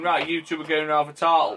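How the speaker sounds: normal talking voice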